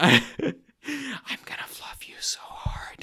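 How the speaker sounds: very slow, drawn-out ASMR-style whisper. Repeating the line after a request for ASMR style: ASMR-style whisper. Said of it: "I prefer A S M R Truman".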